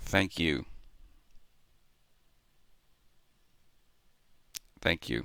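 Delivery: near tears, voice straining to hold back crying. Thanking a commenter after reading their message aloud: holding back tears. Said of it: "I'm trying not to tear up".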